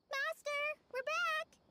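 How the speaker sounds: very high-pitched, loud shouting call. Calling out to the master on arriving back: shouting. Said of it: "You don't have to shout".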